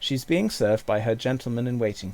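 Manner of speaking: ordinary delivery, nothing marked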